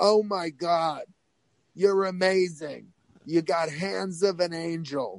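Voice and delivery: put-on Long Island accent. Act out the guy who ran the school walking up to you, in a Harvey Fierstein-like voice. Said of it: "He talked like this".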